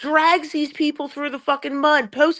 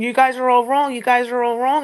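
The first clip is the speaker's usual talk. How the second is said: plain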